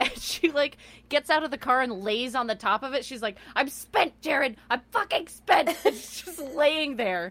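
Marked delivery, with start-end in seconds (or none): 3.6-5.8 mock shouting, high-pitched yell. Retelling a woman lying on the car yelling at Jared, imitating her yelling. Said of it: "yelling at each other".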